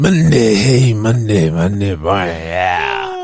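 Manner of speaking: big, puffed-up macho pro-wrestler showman delivery. Imitating the other speaker's greeting: macho Randy Savage voice. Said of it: "macho Randy Savage across from me".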